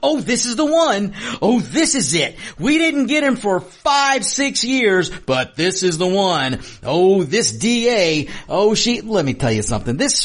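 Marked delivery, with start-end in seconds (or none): 0.0-9.0 high, slow, mock gushing TV commentator voice. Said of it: "a bunch of talking heads on T V".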